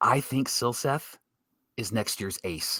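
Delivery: low, hushed, secretive whisper. Asked what to expect from a young starter next year, telling everyone to lean in, whispering. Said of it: "I'm going to whisper this".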